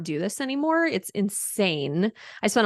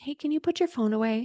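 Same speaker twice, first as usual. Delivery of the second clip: gentle, sweet-as-pie polite tone, pitched up; 5 semitones higher, 3 dB quieter than usual. Recounting asking a student to put his phone away, the speaker acts out asking real nice. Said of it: "I bent down real nice and I was like".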